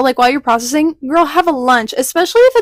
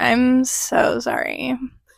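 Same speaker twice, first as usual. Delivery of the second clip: breathy, mocking whispered voice; 7 dB quieter than usual. Repeating the other speaker's apology to the audience: mocking imitation of her voice. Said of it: "Are you making fun of my voice?".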